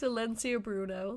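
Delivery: ordinary delivery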